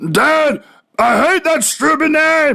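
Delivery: very high, slow, drawn-out voice. Retelling the son's reply to his nickname: imitating Bobby. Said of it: "I don't know if I do the voice as, as, uh, as, as good as he can, but, uh, I'll try it".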